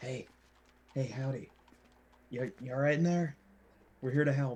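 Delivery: hushed, soft, quiet voice. A character speaks through an inch-wide gap in a window, speaking quietly. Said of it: "He's gonna quietly just be like".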